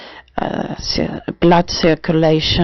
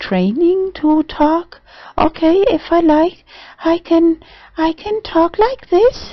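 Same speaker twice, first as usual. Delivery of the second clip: noticeably lighter, higher voice; 13 semitones higher than usual. Explaining voice training, demonstrating talking higher. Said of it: "it's possible to talk higher".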